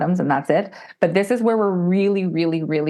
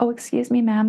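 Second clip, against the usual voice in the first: mock self-righteous tone, much higher; 6 semitones higher than usual. Retelling how her past self interrupted a woman: imitating her self-righteous tone. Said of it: "self-righteous [name] was like".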